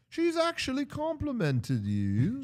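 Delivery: put-on very high, drawn-out, swooping British accent. Imagining Stevie B bursting in to reassure someone: Stevie B British accent. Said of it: "that was a good, uh, accent".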